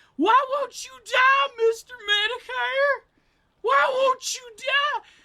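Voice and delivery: put-on very high, very loud, top-of-the-lungs screech. Retelling what Ethan Ralph screams at Mister Medicare: imitating Ethan Ralph screaming. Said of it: "he screams at the top of his lungs".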